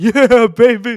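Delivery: put-on excited sportscaster voice, very loud and high-pitched. Doing an impersonation after saying brace yourself: Dick Vitale impersonation. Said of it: "my best Dick Vitale impersonation".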